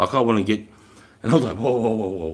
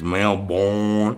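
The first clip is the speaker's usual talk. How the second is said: put-on American accent. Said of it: "And the Yank says".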